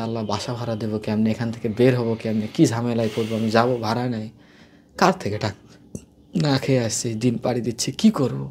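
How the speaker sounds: plain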